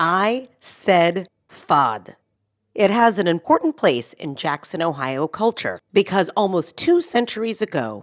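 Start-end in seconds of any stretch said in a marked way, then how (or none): 0.0-1.3 slow, careful pronunciation. Showing the listener how the word is pronounced: said slowly. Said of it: "Let me say that slowly for you".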